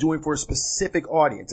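ordinary delivery

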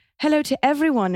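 posh received pronunciation British. Reading out the next listener question in a put-on british rp accent. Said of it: "I'll read you the next question in a".

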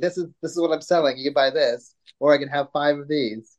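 plain

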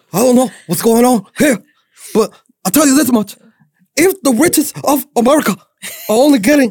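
loud, very high pitched, worked-up, pushed delivery. Others are praising your impersonation of the politician, so perform your Bernie impersonation. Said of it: "We found your new impersonation".

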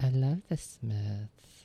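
slowly in a woman's voice. Trying the line a second time after a failed attempt, imitating Zooey's voice. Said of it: "I'll try it again".

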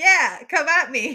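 huge, very loud, slow, drawn-out bellow. A player describes their character yelling at an enemy in the room, retelling a yell. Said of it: "As I'm yelling at it, going like".

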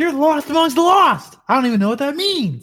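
surprised, confused, high-pitched shouting. Yelling in character at another player, confused: yelling. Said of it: "Why are you yelling at me?".

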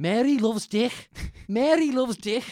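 put-on very loud, high, thick Scouse accent, shouting. Retelling a man on television possessed by spirits, imitating a big Scouse accent. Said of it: "he started going out with a big Scouse accent".

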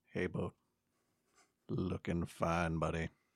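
whispered character voice. Voicing a character casting a message at a friend: whispering in character. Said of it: "And he whispers".

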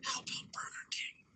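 soft, hushed whisper. Retelling whispering a food request into a brother's ear: retelling a whisper. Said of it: "so I whisper in his ear".

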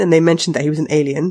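plain

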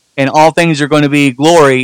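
ordinary delivery

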